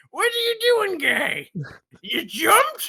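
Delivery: very high, squeaky, swooping comic voice. Telling someone what you hear in your head whenever someone takes a fall, use an Adam Sandler voice. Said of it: "I hear Adam Sandler in my head going".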